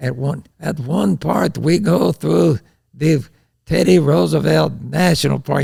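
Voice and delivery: put-on Swedish accent. Retelling what a guide told the riders: imitating a swedish accent.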